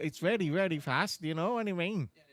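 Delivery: Northern Irish accent, rattled off quickly. During a race broadcast, showing how people in northern ireland speak: northern irish accent. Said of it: "in Northern Ireland they speak like this".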